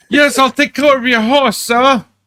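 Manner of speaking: very high-pitched, best-effort put-on British accent. Urging someone to try it, demonstrating the line in a best British accent. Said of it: "in his best British accent be like".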